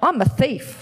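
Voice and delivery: ordinary delivery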